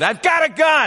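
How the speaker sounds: acted-out, shrill, very high, all-out yell. Retelling waking at night to a noise, imitating own loud yell. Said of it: "I yelled as loud as I could".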